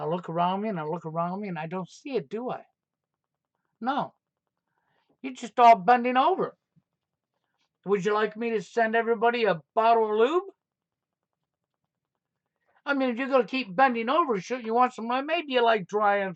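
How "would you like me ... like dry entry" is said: heavily sarcastic, mocking tone. Scolding listeners who stay silent, then offering something: sarcastic. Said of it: "now I'm being sarcastic".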